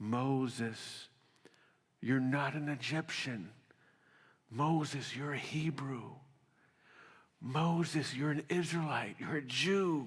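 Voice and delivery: hushed, confiding, secretive half-whisper. Acting out a mother secretly telling her son who he is: imitating Moses' mother half-whispering. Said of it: "his mother whispers in his ear".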